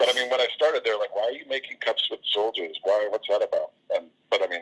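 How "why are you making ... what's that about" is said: normal talking voice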